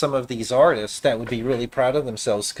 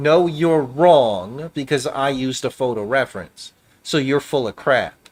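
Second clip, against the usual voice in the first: smug, self-satisfied, know-it-all retort. Retelling what artists said back when corrected: imitating a smug retort. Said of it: "they would say to me very smugly".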